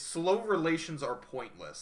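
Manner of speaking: ordinary delivery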